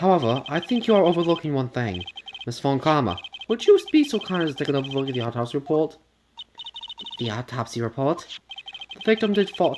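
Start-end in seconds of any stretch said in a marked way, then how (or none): 7.2-9.8 bad fake British accent, quieter. Voicing one of two game characters in a shitty british accent. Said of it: "Shitty British accents".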